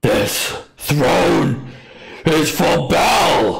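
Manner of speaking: loud, rough, harsh, high infernal yell. Narrating a towering foe who yells at Rocky: yelling out in Infernal. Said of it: "just sort of yells out in infernal".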